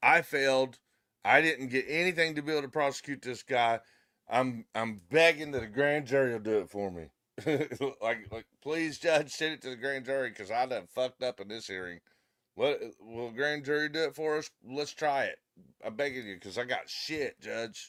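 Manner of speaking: normal talking voice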